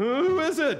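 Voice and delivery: insistent and demanding. Abner, woken by David shouting down from a far hill, demanding. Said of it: "Abner demanded".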